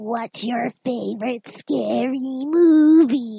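bad creepy voice with movie drawn out. Host asking this week's slasher topic, in a Ghostface impression. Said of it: "That was the worst impression".

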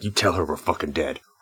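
threatening tone. A player character shoves a gun in a man's face, menacing threat. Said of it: "shove my gun in his face".

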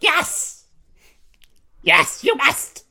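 very high, drawn-out, insistent witch voice. Retelling a movie scene, quoting the witch: imitating the witch insisting. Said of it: "the witch is like".

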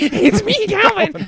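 tiny, very high, squeaky little gremlin voice. Answering that the character is a little gremlin: little gremlin Calvin voice. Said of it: "he's a little gremlin".

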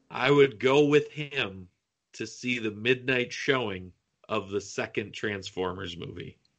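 slow, deliberate, carefully spaced-out delivery. Repeating a sentence he just said, as a slower repeat. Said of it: "I'll say that again slower".

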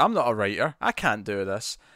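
plain

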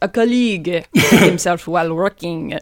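put-on slow delivery in a French accent. Retelling what Marchef says about an injured colleague: Marchef's accent. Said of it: "funny 'cause of the accent".

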